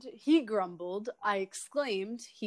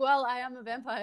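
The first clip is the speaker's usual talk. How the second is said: plain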